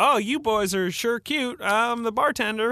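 bad Southern accent, high-pitched and slow. Imitating an actress's bartender character: Leighton Meester's bad Southern accent. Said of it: "does a Southern accent".

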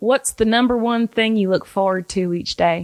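sweet, gentle voice. Reading out a viewer's question in Savannah's way of talking. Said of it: "That's how she talks".

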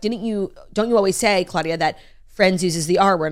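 ordinary talk

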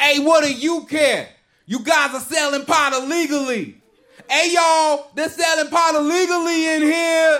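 full-on, very high, ranting yell. Retelling a customer who forgot his id: imitating a man yelling. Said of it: "He just starts yelling".

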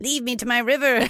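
high-pitched frog-like voice. Speaker shows how they imagined a frog would talk, in a frog voice. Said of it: "I guess that's how a frog would talk".

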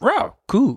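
very high, goofy, squealing cartoon dog voice. Mid-conversation about stocks, the speaker suddenly does a Scooby-Doo impression. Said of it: "this is my impression of Scooby-Doo".

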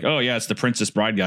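usual speaking voice

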